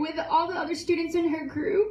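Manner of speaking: tearful, emotional voice catching. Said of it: "I'm gonna get emotional".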